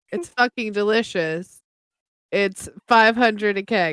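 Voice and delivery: low, flat, completely deadpan delivery. A character answers the guy's question: completely deadpan. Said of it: "I tell him completely deadpan".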